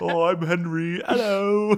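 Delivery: very slow dopey voice. Imitating the game's hero greeting villagers: dopey Henry voice. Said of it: "the village idiot".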